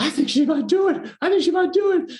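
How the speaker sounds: put-on very high, rushed, thrilled Irish-accented screaming. Retelling the Irish casting director's phone call: imitating excited Irish accent. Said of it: "this wonderful uh, Irish accent, you know, screaming on the phone".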